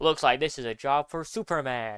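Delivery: really loud, full-throated shout. Retelling a 1941 animated serial scene: Clark Kent shouting. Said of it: "Clark shouts".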